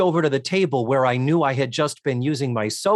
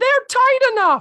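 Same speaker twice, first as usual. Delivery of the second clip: very high, loud prepubescent falsetto; 6 dB louder than usual. Retelling how Andy answered during a pants fitting: imitating Andy's falsetto. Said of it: "In his falsetto, prepubescent Andy".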